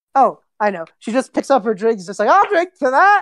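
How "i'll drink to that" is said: put-on shrill, very high drunken scream. Voicing drunken Talia toasting with her drink: drunken Talia shouting. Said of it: "the drunken Talia just screams out".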